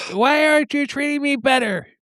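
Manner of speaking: mock whiny complaining. Acting out a prisoner complaining about his treatment: mock whiny complaining. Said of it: "he was probably bitching about it".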